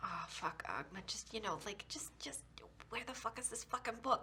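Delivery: hushed, muttered whisper under the breath. Praying to a god for help finding a book: whispering under breath. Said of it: "just really under my breath, whisper a prayer".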